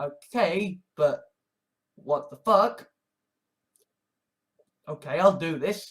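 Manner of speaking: ordinary talk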